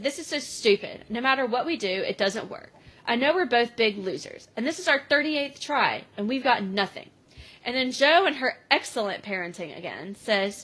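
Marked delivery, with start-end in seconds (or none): none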